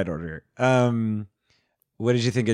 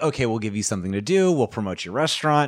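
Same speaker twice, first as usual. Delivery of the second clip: usual speaking voice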